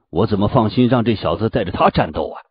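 plain

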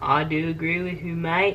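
bizarre, fake Australian accent, loud and high. Answering a co-host on a show for viewers, in a bad Australian accent. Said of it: "anyone who's ever heard an Australian accent would mistake what you just did".

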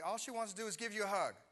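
high, loud yell, calling from a distance. Retelling what a little girl's mom called out, retelling a mom's yell. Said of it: "she just yells to me".

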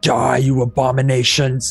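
heroic war cry, spoken out. A character leaping off a railing to attack, booming voice. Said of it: "I say in a booming voice".

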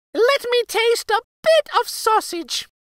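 very high, loud, squeaky little mouse voice. Reading a fairy tale, the queen of mice asks the queen for sausage, Dame Mouserink's squeak. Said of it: "she squeaked".

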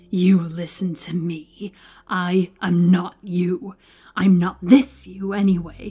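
slow, furious hissing with venomous spite. Narrator reads Scriven, face to face with Edgar: hissed with furious spite. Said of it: "He hissed in his face with furious spite".

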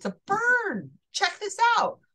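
high, loud, excited, showing-off tone.

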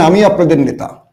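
normal talking voice

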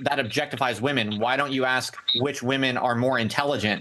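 ordinary talk

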